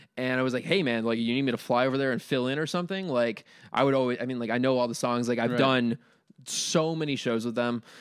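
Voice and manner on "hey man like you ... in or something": usual speaking voice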